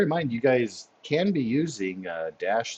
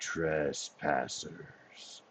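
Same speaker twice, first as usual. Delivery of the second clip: empty, hollow, echoing whispered voice; 6 semitones lower, 12 dB quieter than usual. Narrator of a game voices a presence in the chamber; hollow, empty echoing voice. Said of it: "You hear a hollow, empty voice echo".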